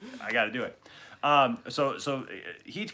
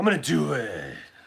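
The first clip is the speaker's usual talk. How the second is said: put-on gruff superhero voice; 2 semitones higher than usual. Imitating a TV villain who talks like Batman: Cicada's Batman voice. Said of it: "the Batman voice thing".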